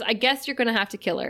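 usual speaking voice

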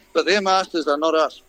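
plain

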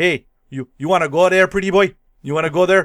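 put-on very loud, booming Canadian accent, laid on thick. Quoting a goon's opening line from a film: Racky voice, very Canadian. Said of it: "he says it in the most Canadian way possible".

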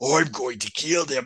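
gruff fake Australian accent, cartoon voice. Describing a cartoon character attacking some dudes, quoting him in a gruff cartoon voice. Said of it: "he's got the gruff cartoon voice".

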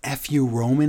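ordinary talk

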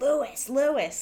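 high, repeated yell, over and over. Recapping a scene, acting out a character yelling a man's name. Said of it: "Anith starts yelling".

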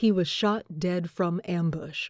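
plain

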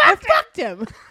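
very high, shrill, shouted outburst. Recounting a running joke from a Vegas trip, retelling a yell. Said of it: "would just start yelling".

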